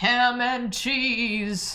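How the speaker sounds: over-the-top announcer call. Announcing a sandwich while sorting sandwiches into tiers: Super Smash Bros. announcer voice. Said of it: "I'm trying to do like the Super Smash Brothers announcer voice".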